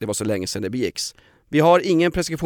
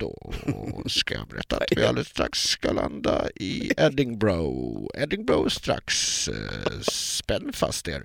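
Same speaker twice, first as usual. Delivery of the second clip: whispered, hushed, breathy intercom announcer voice; 5 semitones lower, 7 dB quieter than usual. Telling a story about a male flight steward: imitating a cabin announcement. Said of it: "Så här låter det när han säger".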